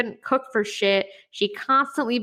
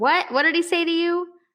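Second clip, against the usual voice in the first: put-on high, loud yell; 9 semitones higher than usual. Telling a joke, a hard-of-hearing wife in the passenger seat asks: imitating a wife yelling. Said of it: "so she yells".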